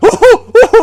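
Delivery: very high, shrill, loud, nervous laughing whoops. Retelling getting bumped during a commotion on the patio, imitating own nervous laughing. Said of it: "I started like nervous laughing".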